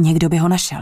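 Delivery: plain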